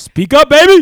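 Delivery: teasing, very high, loud shout.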